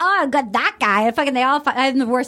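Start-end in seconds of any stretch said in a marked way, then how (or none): 0.0-1.1 cheesy, slow, bad leprechaun-style Irish brogue. Retelling what people on a show said: imitating people in an Irish leprechaun accent. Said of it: "I all sound like Irish leprechaun when I do it".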